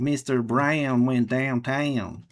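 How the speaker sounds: put-on southern American accent, like a cowboy. Recalling talking after coming back from the United States: Southern American accent. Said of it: "I was talking like this with a southern accent".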